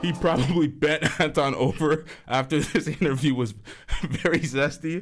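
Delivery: breaking into laughter mid-speech. Reading a viewer's super chat aloud on stream, laughing while reading. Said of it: "let me read that again without laughing".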